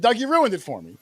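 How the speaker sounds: mild, half-yelled reproachful tone. Retelling how someone blurted out the answer: retelling a yell. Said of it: "I was yelling at Doug".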